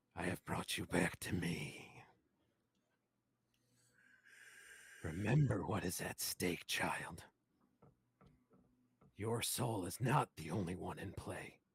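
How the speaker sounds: low, dark, menacing, ominous voice. Voicing a being whose breath is felt on the listener's neck: low, ominous voice. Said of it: "you hear a low, ominous voice".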